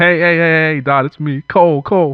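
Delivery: anxious, nervous, worried, high and slow, calling out. Narrator reading a story, J. Cole calling out from the bushes, worried J. Cole voice. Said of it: "clearly worried about getting stabbed".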